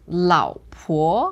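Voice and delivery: third tone on 老, second tone on 婆. Teaching how to say wife in mandarin: third then second tone in 老婆. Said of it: "the first one is third tone. Second one, second tone".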